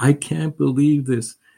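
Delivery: put-on high, tearful crying through happy tears. Retelling a woman crying as she is shown her unit, imitating someone crying. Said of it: "she's like crying".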